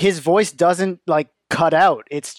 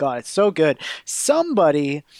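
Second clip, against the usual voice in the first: ordinary talk, nothing marked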